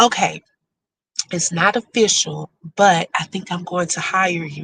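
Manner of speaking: soft, confiding, secretive half-whisper. Retelling what the interviewer half-whispered to the speaker during a practice interview, half-whispered. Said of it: "she whispered to me".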